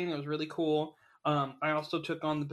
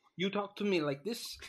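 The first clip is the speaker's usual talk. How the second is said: put-on Russian accent; 4 semitones higher than usual. Speaker shows off their own Russian accent: put-on Russian accent. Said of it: "This is my Russian accent".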